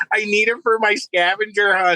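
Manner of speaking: put-on nervous child voice. Retelling a high school kid's reply at a gas station: imitating a nervous kid. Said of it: "He was so nervous to talk to somebody".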